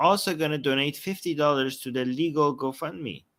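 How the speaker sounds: ordinary talk, nothing marked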